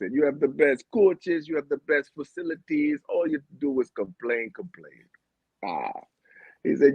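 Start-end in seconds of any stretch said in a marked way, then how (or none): 0.1-5.0 put-on Jamaican accent, steady scolding lecture. Retelling what friends used to tell the speaker, in a jamaican accent. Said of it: "that's my Jamaican accent".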